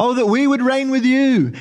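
heavy, ironic, acted-out sarcastic delivery. Quoting the apostle Paul about the apostles, retelling sarcastic quote. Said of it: "He's being sarcastic".

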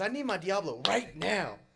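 acted, high, loud, cranky, upset hangry voice. Retelling a friend's demand for missing sauce: imitating a hangry, upset demand. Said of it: "He was getting hangry upset".

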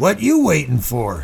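sharp, rough, flick-knife snap. Holding a ball of paper mush, a boy prods the narrator, sharp, snapping voice. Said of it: "a flick knife snap in his voice".

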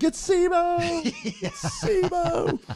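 very high, emphatic, drawn-out swooping cry. Recalling how they screamed at someone during a discussion, retelling a scream. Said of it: "like I screamed at Joe".

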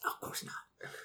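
quiet, unvoiced whisper.

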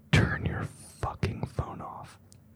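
very quiet, threatening whisper, like a whispered yell. Describing how a mom whispers in your ear, imitating a whispered threat. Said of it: "Then you whisper in your ear".

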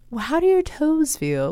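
high-pitched bad British accent.

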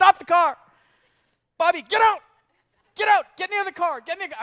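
high, very loud, urgent barking yell. Retelling ordering a kid out of the car: imitating own past shouting. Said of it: "I didn't say it like that".

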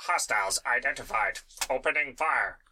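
mechanical robotic voice, announcer-like delivery. Narrating a tabletop game and voicing approaching enemies: robotic voice. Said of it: "you hear their robotic voices".

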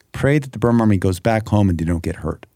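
ordinary delivery

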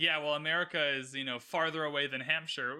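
usual speaking voice

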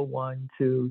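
hushed, low voice. Retelling how Evan counted for a producer's level check, counting very quietly. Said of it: "very quietly".

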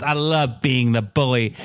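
plain

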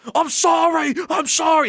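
very high, drawn-out, hammy delivery. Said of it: "he was going like".

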